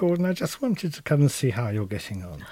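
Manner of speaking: very quiet, hushed, polite voice. Speaker recalls a visitor checking on his work in the cutting room, in a very quiet voice. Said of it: "he said in this very quiet voice".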